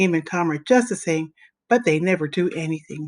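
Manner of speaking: usual speaking voice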